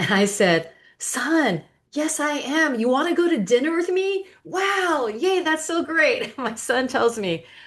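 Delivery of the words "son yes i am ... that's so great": over-eager, thrilled gushing, very high-pitched. A mother retells answering her son's dinner invitation, retelling excited gushing. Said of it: "because I was so excited".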